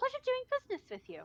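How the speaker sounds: very high, cheery, cheerful voice. Voicing a blacksmith who snatches the gold: cheerful blacksmith voice. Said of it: "ever so cheerfully".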